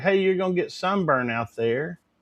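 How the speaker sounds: ordinary talk, nothing marked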